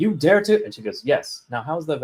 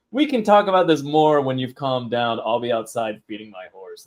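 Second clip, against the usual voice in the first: usual speaking voice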